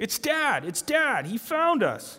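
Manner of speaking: loud, thrilled high shouting.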